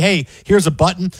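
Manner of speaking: ordinary talk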